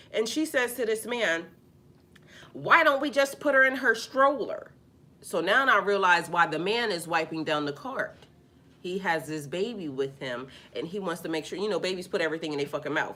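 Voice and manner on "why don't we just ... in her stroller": high-pitched, put-on spiteful and nasty tone. Retelling what a lady said to a man: imitating a nasty tone. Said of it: "she has the nastiest, you know, energy".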